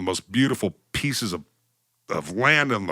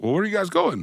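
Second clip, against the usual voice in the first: put-on poor Irish accent, pitched very high; 10 semitones higher than usual. Retelling what the car rental clerk in Ireland said: bad Irish accent. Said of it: "I can't do a good Irish accent".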